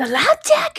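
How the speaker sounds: high, loud incredulous voice. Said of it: "the incredulity in her voice".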